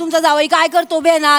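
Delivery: ordinary delivery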